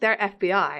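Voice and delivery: ordinary talk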